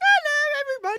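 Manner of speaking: put-on very high-pitched, obnoxious child voice. Retelling how Tommy shows up and greets everyone, imitating his obnoxious voice. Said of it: "it's so obnoxious. I'm like, who talks like that?".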